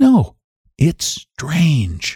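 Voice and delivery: said on a breath. Mrs. Peters replies to Mrs. Hale, breathed. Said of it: "breathed Mrs. Peters".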